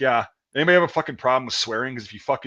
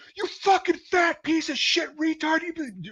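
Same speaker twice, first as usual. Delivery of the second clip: very high, shrill screaming. Retelling others yelling at the speaker: imitating people screaming insults. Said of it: "They were screaming it at me".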